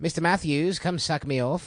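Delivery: put-on high, laid-on old-school New York accent. Speakers discussing an old accent type; one does a Mr. Feeney old New York accent. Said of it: "It's like the old New York accent".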